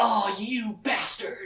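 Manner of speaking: angry exclamation. Retelling a story scene, quoting Richard's reply: imitating Richard's outburst. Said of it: "And Richard's like".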